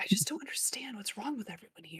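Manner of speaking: very quiet, hushed whisper, barely audible. A player character speaks to the spider in their vest, whispering. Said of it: "I'm gonna keep whispering to my spider".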